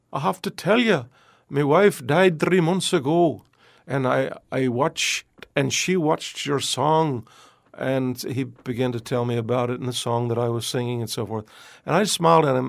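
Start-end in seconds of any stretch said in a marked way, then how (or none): 0.1-7.2 strong, very Scottish brogue. Retelling what a man in a raincoat said after recognizing him: very Scottish brogue. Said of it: "in a very Scottish brogue".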